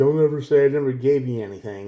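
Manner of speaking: acted-out smug, condescending, self-centered tone. Imitating what a toxic person says when holding favors over you: imitating a self-centered person's tone. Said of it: "They'll say it just like that too".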